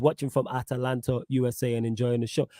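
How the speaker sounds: normal talking voice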